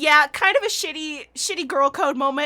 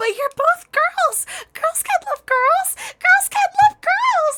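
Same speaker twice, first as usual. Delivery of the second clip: put-on very high wailing, crying shout; 3 dB louder than usual. Retelling how Hitomi wails and shouts in a scene: imitating Hitomi wailing and shouting. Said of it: "to wail and shout".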